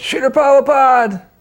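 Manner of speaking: very high, very loud, far-carrying shout. Retelling calling out to someone from the door: retelling a very loud yell. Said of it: "I yelled it very loud".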